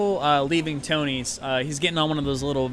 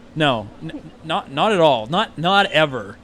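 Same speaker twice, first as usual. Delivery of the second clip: dead serious, raised voice, gangster act dropped; 6 dB louder than usual. Retelling how a man answered once his gangster act dropped, real serious. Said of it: "he gets like real serious".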